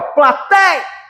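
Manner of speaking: high, shouted word plateia. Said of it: "gritar a palavra".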